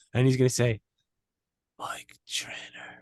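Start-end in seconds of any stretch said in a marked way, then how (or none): 1.7-3.0 put-on whispered dying old man voice, quieter. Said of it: "He's gonna whisper fucking my name".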